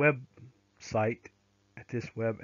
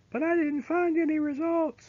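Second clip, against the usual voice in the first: very high-pitched, panicky, scared student voice. Speaker walking through a Canvas assignment search, imitating a scared student. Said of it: "That's my best scared student voice".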